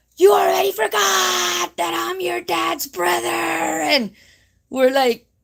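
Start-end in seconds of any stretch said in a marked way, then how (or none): 0.2-3.3 acted, mounting, heated, high, rough angry outburst. Retelling their dad's brother getting more and more angry, imitating an angry man. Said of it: "getting more angry and more angry".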